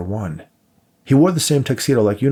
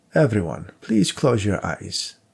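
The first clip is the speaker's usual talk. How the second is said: commanding, ethereal, otherworldly voice. Reading a novel, the host of the gathering addresses everyone in the room: commanding yet ethereal voice. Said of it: "in a commanding yet ethereal voice".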